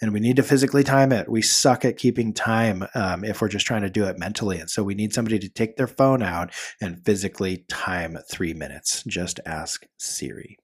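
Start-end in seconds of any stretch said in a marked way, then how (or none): 9.1-10.4 hushed, very quiet whisper under the breath. Advising listeners to time three minutes with a phone, said really quietly. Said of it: "I have to say that really quietly".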